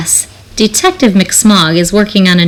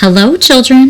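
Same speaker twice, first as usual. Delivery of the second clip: sweet, sugary tone with raised pitch; 5 semitones higher than usual. Narrator reading a story aloud; a character greets the children in a sweet voice. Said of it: "someone said in a sweet voice".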